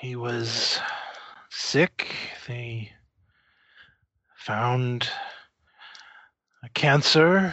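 put-on wheezing, coughing, short of breath. A client tells the group about his sick father, wheezing and coughing. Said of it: "acquiring the distillery, / He kind of wheezes and coughs for a moment. / I was born in 1862 in northern Quebec. / He is coughing and clearly is having some trouble breathing. / I wish to ask for your".

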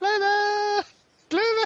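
thin, reedy, piping, very high, level call. Game narrator voicing Hendry calling across the wheat fields, in a reedy piping voice. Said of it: "Hendry's reedy piping voice".

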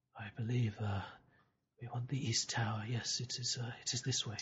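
hushed, half-whispered voice. Voicing Akhtar, who turns to the group after leaving the mosque: half-whispering. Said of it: "and he whispers".

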